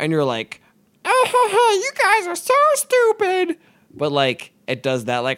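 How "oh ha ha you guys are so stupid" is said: put-on very high, squeaky, scratchy, taunting child voice. Describing how the Minor Bird talks, doing its scratchy child voice. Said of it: "imitated a scratchy child voice".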